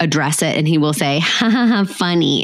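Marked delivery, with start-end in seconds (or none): 1.2-2.4 slow, creepy, uncomfortable put-on laughter. Parent imitates their son's laugh after he hits his sister, imitating a creepy, uncomfortable laugh. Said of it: "in this like creepy, uncomfortable way".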